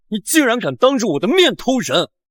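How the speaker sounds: plain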